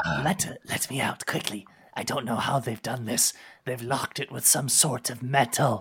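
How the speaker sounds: furious, irate creature voice. Narrator voices a chained lizardfolk prisoner, angry and irate. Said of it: "and you hear the lizard folk on the far end. He is clearly angry and irate, cursing and saying, "By my kinfolk, I'll devour you. How dare you chain me? How dare you lock the child of [name]? Let me /".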